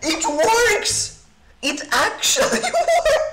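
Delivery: high, slow voice cracking with laughter. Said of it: "Just a little voice crack".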